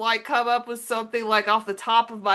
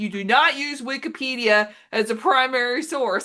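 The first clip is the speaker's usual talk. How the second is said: ordinary delivery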